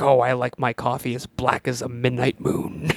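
enthusiastic, eager delivery with real enthusiasm. Describing a show's main character, imitating Agent Cooper: enthusiastic.

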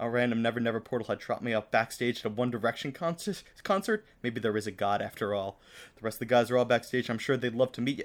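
ordinary talk

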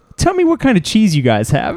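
high-pitched voice with pitch swooping around. Retelling a late-night deli encounter, doing a Christopher Walken impression. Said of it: "I wish I could do a better impression of him".

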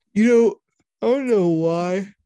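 loud speech through a yawn. Trailing off after describing a robot sound, yawning. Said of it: "Sorry for the yawn".

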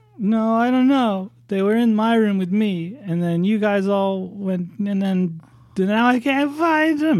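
put-on very high, tearful, crying young girl voice. Voicing a young girl who is crying and holding a teddy bear: crying little girl voice. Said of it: "And she breaks down crying again".

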